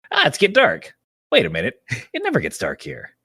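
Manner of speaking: hammy, clumsy, sing-song cartoon voice, swooping pitch. Speaker recounting a cartoon scene, bad King Kai voice. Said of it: "that's a bad King Kai voice".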